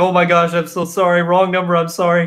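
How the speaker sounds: put-on, high, frantic, flustered, freaking-out voice. Retelling a coworker's apology after a wrong text: imitating someone freaking out. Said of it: "freaking out".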